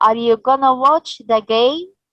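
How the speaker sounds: questioning rising pitch on "game". Teaching intonation for yes-no questions, rise on game. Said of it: "we use the rising".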